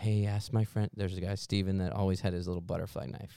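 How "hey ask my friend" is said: imitated whispering voice. Retelling being stuck and asking friends for help: imitating own past whisper. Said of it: "I kinda whisper around".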